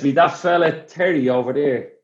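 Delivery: put-on heavy Cork Irish accent. Retelling what a man said about terry, in a thick cork accent. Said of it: "the thickest Cork accent ever".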